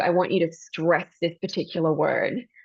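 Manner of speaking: normal talking voice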